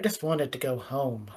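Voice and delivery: low mumbled mutter under the breath. Sitting down in a chair and sighing in character: muttering under breath. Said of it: "you hear me mutter under my breath".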